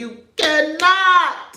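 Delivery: high put-on voice, drawing out cannot. Telling Dawn she cannot, the speaker repeats it in a Jocelyn Hernandez voice. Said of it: "In my Jocelyn Hernandez voice".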